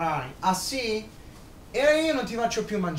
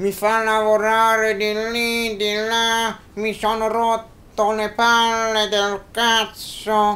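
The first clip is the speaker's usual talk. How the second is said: loud, angry, fed-up grumbling puppet voice; 8 dB louder than usual. In a ventriloquist act, the puppet addresses the audience in the Zio Johnny puppet voice. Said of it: "Novembre 2011,si ripare un altro grande anno di magia,cartomagia e di ventriloquia da parte di [name] il mago([name] fanelli).Il simpaticissimo zio jonny che ormai accompagna il grande mago da 2 anni,si trova alle prese c".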